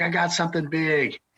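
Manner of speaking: play-acted, high, excited holler, as if calling far. Recounting rough water, quoting a man hollering from twenty feet away: retelling a holler. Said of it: "I hear him hollering".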